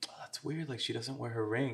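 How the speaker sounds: hushed, very quiet mutter under the breath. Retelling what a woman at the party said to her companion: imitating someone muttering under breath. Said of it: "under her breath".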